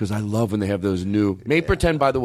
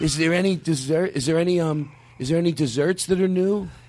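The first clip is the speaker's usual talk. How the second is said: put-on very heavy man's voice; 6 semitones higher than usual. Doing a bit as a customer asking about the menu, in an 800-pound guy voice. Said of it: "This is the voice I do for an 800-pound guy".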